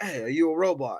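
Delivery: put-on British accent. Retelling a movie scene, quoting a question: imitating Idris Elba in British accent. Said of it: "I use the British accent".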